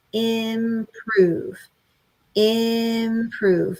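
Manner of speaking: drawn out, said in a steady beat. Showing how to say one word for stuttering: said in a steady beat, drawn out. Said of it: "and maybe hold it out like that a little bit".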